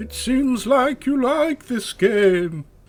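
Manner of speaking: eerie, haunting, ghost-like voice. A ghostly questioner speaks to the player, in a ghostly voice. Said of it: "you sound like some kind of ghost".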